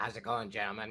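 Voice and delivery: clumsily dropped low and quiet voice. Try an impersonation nobody has ever done for the waiting group, bad Boss Man impression. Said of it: "this is my early boss man impression".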